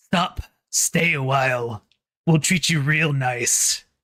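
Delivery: put-on demon character voice. Running a game, the speaker voices the demon grappling a player: demon voice. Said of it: "The demon says".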